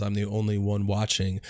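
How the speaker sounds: normal talking voice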